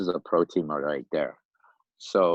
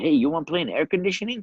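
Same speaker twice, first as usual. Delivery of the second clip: put-on Yugoslavian accent, much higher; 10 semitones higher than usual. Retelling a man in a Camaro inviting him to play, Yugoslavian accent. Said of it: "with an accent".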